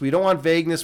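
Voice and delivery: normal talking voice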